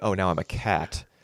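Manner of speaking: put-on exasperated tone. Imitating a film character reacting to being called an animal: imitating exasperation. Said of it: "that kind of exasperated".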